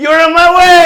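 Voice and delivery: high, loud, furious yell.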